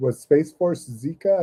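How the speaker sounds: ordinary delivery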